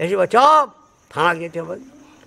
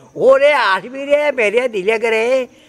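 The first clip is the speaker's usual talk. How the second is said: put-on old woman's scream, higher; 5 semitones higher than usual. Storyteller retells an old woman at her window, imitating an old woman screaming. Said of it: "তেমনি বুড়ি ওইটা চেঁচিছে".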